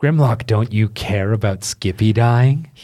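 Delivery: loud, calling-out voice. Voicing a hidden voice calling from around the corner: unseen voice calling out. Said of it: "you hear a voice go".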